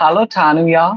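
put-on European accent, jo pronounced as ya. Showing how Europeans pronounce the greeting, in a European accent. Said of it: "they pronounce all like ah and jo like ya".

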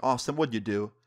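plain

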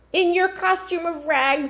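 very high pitch, scornful, contemptuous sneering. The cook speaks to Raisel after the others leave, sneering. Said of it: "the cook sneered".

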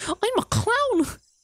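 squeaky cartoon voice. Speaker trying out a clown voice for viewers, Mickey-and-Goofy mix voice. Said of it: "that's a mix of Mickey and Goofy".

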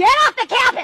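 shouting angrily. Ordering someone off the campus during an argument: yelling. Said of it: "Quit yelling at me!".

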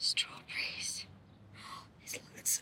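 whispering. Showing the viewer the plants outside, whispering.

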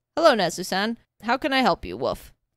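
deep, cheerful, barking character voice. Narrating a story, reading the chief answering a phone call in a deep, cheerful barking voice. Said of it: "A deep, cheerful voice barked".

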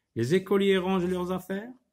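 rising, question-like intonation at the end. Turning a statement into a question orally by intonation: questioning intonation. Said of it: "à l'oral, je mets de l'intonation".

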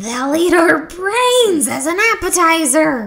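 high, shrieking, screaming alarmed voice. Narrator voicing Rhonda peeking around the basement corner, screamed. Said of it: "Rhonda screamed".

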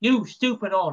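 acted forceful punchy delivery. Retelling how a character delivers an insult: imitating a forceful insult. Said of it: "he put some oomph into it".

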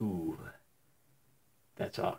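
very quiet, hushed, breathy whisper. Retelling what a kid behind whispered in class: imitating someone whispering. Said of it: "whispered to me".

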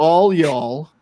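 very loud, belted-out put-on Texas accent. After living in Dallas, trying out a Texas accent: put-on Texas accent. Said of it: "I was getting better at doing a Texas accent".

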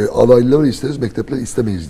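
normal talking voice

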